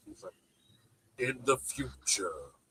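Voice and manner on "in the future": jazzy movie-trailer narrator voice-over. Imitating a movie trailer narrator's line: imitating jazzy trailer narrator voice. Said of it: "the guy with the jazzy voice".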